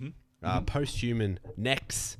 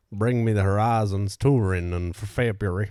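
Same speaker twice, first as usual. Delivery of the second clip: wandering, inconsistent put-on Southern accent; 8 dB louder than usual. Speaker answers a cue about sayings in the South, wandering put-on Southern accent. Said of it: "The geographical location of that accent really varied".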